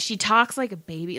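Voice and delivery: ordinary talk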